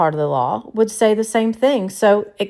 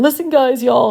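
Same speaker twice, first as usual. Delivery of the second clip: mock crying, higher pitch; 3 semitones higher, 3 dB louder than usual. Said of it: "crying, saying".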